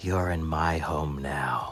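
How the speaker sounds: barely audible, faintest half-whisper. Voicing a creature half-whispering behind a player's head: faintest half-whisper. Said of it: "the faintest whisper from behind your head".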